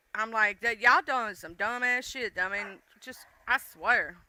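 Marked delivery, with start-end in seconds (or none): none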